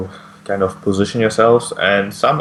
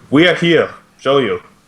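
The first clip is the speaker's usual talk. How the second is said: proclaimed, called outward, pitched up; 5 semitones higher than usual. Voicing the supposed leader calling toward the tree and forest: shouting. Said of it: "just shouts".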